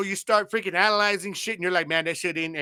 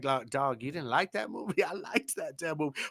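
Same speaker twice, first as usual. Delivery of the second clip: very quiet, soft-spoken, under the breath; 2 semitones lower, 9 dB quieter than usual. Retelling a coworker's reply at work, imitating JP speaking quietly. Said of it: "he said it kind of like a little bit quiet".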